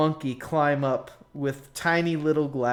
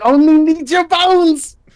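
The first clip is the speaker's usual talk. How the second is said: very high, very loud, shrill screeching goblin shriek; 14 semitones higher, 14 dB louder than usual. Voicing a tied-up goblin screaming that he needs bones: goblin screaming. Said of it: "screaming about how he needs their bones".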